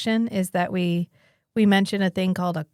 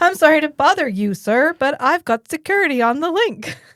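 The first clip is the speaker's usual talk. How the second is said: earnest, overeager, trying-too-hard, raised line reading; 7 semitones higher, 5 dB louder than usual. Retelling an actress delivering her only line: imitating someone trying very hard. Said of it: "She is trying so fucking hard".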